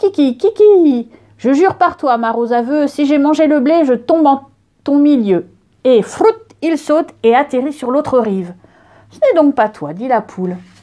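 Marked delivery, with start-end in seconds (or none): 0.0-5.5 strutting, self-important, proud crowing rooster voice. A narrator reading a fable voices the rooster stepping forward, proud rooster voice. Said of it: "Le coq s'avance tout fier. / Le coq s'avance tout fier. / Le coq s'avance tout fier. / Le coq s'avance tout fier. Kiki, kiki!".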